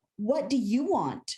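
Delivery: play-acted weary, impatient, exasperated, fed-up tone. Retelling what God asked in prayer: God's exasperated voice. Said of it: "almost hear exasperation in his voice".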